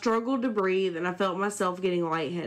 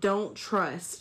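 put-on demonic hissing voice. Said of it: "this demonic record-playing backwards voice, hissing".

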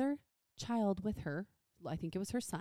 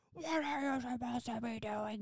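play-acted, scolding, yelling shout; 3 semitones higher, 3 dB quieter than usual. Retelling how a mom yelled at her kid in gymnastics: imitating a mom yelling. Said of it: "Just yelling at her kid".

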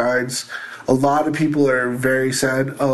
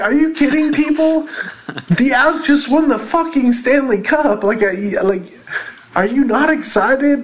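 mock-exasperated outburst, much higher pitch; 12 semitones higher, 4 dB louder than usual. Telling a story about an unexcited crowd, the speaker re-enacts his own disbelief, retelling an exasperated outburst. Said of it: "retelling his disbelief at unexcited crowd".

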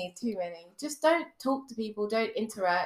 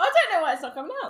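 loud, high-pitched talking with mouth full of food; 9 semitones higher, 5 dB louder than usual. Answering a dare to whistle, talking with mouth full. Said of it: "her mouth is full of crispy".

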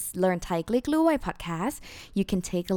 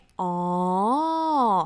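drawn-out oh, rising and falling. Showing the sound made on understanding something, long wavy 'oh', up and down. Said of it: "you have to make it very long. Like, oh, like it's just like a wavy, you know, with the tone, nah? Up, down, and up and down".

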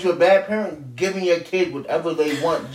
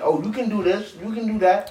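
easygoing, indulgent, permissive parent tone; 3 semitones higher than usual. Describing parents who try to be their kid's friend: imitating a permissive parent. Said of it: "you got parents that really try to be their kid's friend".

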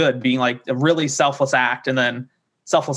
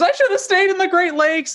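very high, shrill, panicked, freaked-out scream. Retelling a wedding scene where a groomsman freaks out: imitating Rory screaming. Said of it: "he just screams".

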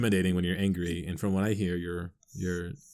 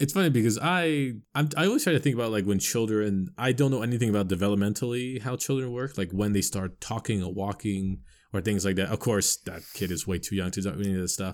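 plain

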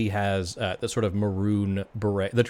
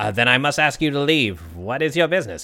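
put-on goblin barkeeper voice; 4 semitones higher, 4 dB louder than usual. Game master voices a goblin behind the bar confronting the players, goblin barkeeper voice. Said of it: "You see what looks to be a goblin individual. He has the sort of maroon beret, the raspberry beret of the [name], and he is behind the bar".

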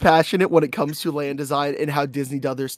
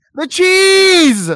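shrill, very high, very loud scream; 9 dB louder than usual. Speaker trying to get the other to name a cheese brand, yelling. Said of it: "Stop yelling at me!".

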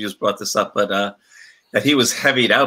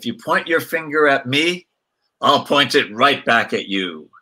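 play-acted, grand, theatrical, commanding, dramatic voice; 4 semitones higher than usual. Recounting a man's words as he sat down, retelling a booming, dramatic line. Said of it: "with his, you know, booming voice".

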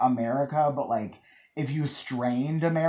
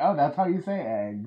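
usual speaking voice

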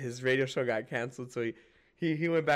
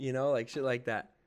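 ordinary delivery

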